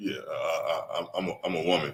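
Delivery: very low, soft voice. Retelling how a man showed up to a Carolina Panthers tryout; Darth Vader voice. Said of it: "with a Darth Vader sounding voice".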